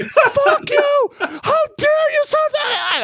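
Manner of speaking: mock raging outburst, very high-pitched furious yelling. Telling a story about storming into an office to yell at a guy, retelling furious yelling. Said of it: "I was fucking going off".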